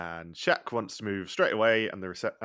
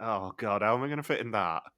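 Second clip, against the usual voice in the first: acted groaning sound, mock groan; 2 semitones higher than usual. Imitating the camera guy seeing the convertible arrive: imitating a groan. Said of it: "You can almost hear him groan".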